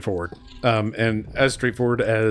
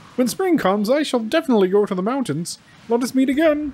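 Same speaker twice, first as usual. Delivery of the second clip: frog character voice, pitched very high; 14 semitones higher than usual. Speaker performing lines of a scene, in a Kermit the Frog voice. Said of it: "Why come up with a frog voice".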